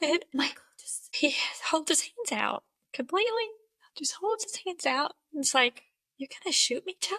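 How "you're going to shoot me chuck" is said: stunned, incredulous, disbelieving tone. Retelling a question asked while a gun was pointed: imitating disbelief. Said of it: "in disbelief".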